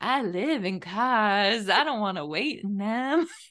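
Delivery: very slow, laid-back, groovy chill drawl. Retelling how she talked the whole episode: imitating a groovy, chill voice. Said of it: "that's how she was talking the whole episode".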